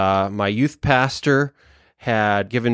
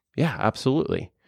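put-on, hushed, whispered, dead-serious, straight voice; 3 semitones higher, 6 dB quieter than usual. Retelling a youth pastor's answer to the speaker's question, retelling a straight-faced serious reply. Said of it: "with a straight face, serious voice".

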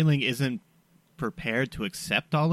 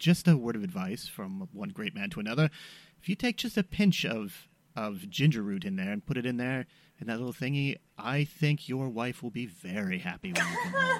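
confidential, hushed half-whisper; 4 semitones lower, 6 dB quieter than usual. Half-whispering advice in a guard's ear while passing by: half-whispering in someone's ear. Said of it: "I'm gonna whisper in his ear".

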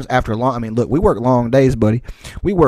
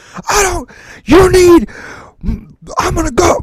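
put-on furious sputter, higher and louder; 5 dB louder than usual. Retelling how a guy reacted to a threat: imitating someone too mad to finish sentences. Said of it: "so mad he can't complete a fucking sentence".

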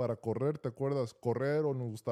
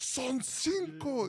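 loud yelling, pitched higher; 14 semitones higher than usual. Retelling yelling back at a coach who was shouting in his ear: imitating himself yelling back. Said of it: "me empieza a gritar".

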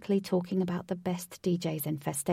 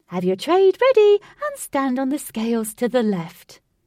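chirpy, sing-song, very loud voice; 6 semitones higher, 11 dB louder than usual. Narrator reading a ticket lady directing a group to the scales: chirpy. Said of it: "A chirpy lady wearing a bobble hat".

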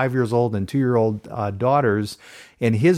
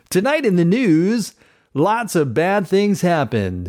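calm, reassuring, soothing newscaster voice, pitched up; 7 semitones higher, 3 dB louder than usual. Podcast host says they look like a newscaster on screen, reassuring newscaster voice. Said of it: "I'm going to talk like this".

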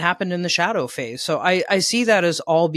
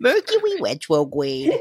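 swooping up-and-down sing-song cartoon voice. Teasing another speaker about tripping on a phrase: Elmer Fudd voice. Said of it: "It's easier to say it like him".

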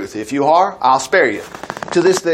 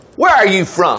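harsh, rough, demanding, interrogating tone; 3 semitones higher than usual. Joseph, pretending not to recognize his brothers, questions them: demanding roughly. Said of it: "He demanded roughly".

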